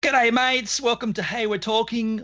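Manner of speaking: high-pitched, fake, put-on Australian accent. Guest introducing themselves at the start of the show: put-on Australian accent. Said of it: "I'm putting on an Australian accent".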